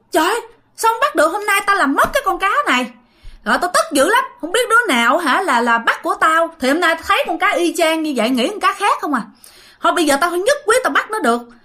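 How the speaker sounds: high, fast, stubborn, defiant tone. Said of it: "ông này ông cãi".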